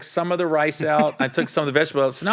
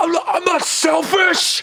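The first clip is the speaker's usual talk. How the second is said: acted-out yelling, raised voice, pitched very high, drawn out; 13 semitones higher, 4 dB louder than usual. Retelling an argument, the speaker quotes the listener's reply: retelling a raised voice. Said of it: "you like raised your voice at me".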